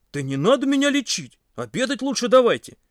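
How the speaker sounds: very high-pitched, ringing exclamation. Lying down, Pasha answers the girls who want to treat him, exclaiming. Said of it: "воскликнул Паша".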